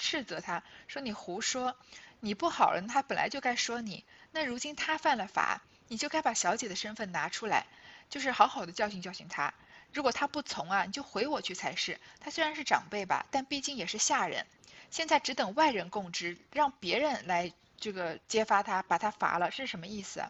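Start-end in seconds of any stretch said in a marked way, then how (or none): none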